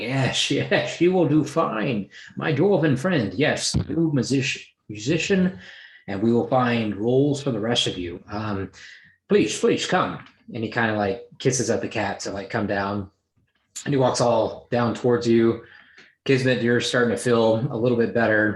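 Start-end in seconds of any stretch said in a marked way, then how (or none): 0.0-10.3 ship captain character voice. Voicing the ship's captain welcoming new crew: ship captain character voice. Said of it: "The captain's kinda like ... He's like".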